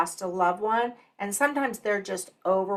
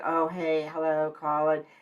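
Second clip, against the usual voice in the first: flat, dull, low, unsmiling, unenthusiastic delivery; 4 semitones lower than usual. Coaching phone answering, showing how not to greet a caller: not upbeat. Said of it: "where you don't sound like".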